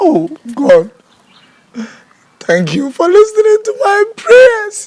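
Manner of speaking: very high, swooping, joyful weeping. Being told not to cry, crying tears of joy. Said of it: "Tears of joy".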